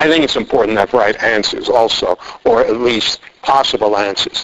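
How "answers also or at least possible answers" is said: normal talking voice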